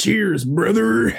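rough-edged pro wrestler voice. Voicing a character who toasts a companion: Hulk Hogan voice. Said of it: "[name]'s now Hulk Hogan".

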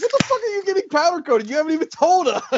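exasperated high outburst. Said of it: "I'm like".

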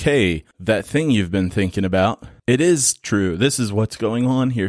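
normal talking voice

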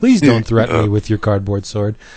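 ordinary talk

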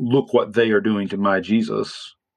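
ordinary talk

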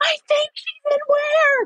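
shrill, piercing, very high shrieking scream. Retelling screaming a question into the phone, acting out the scream. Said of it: "And I'm screaming".

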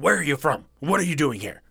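put-on, accusing, interrogating tone. Retelling a male worker questioning a woman, mimicking accusing questions. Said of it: "he just starts asking all these accusing questions".

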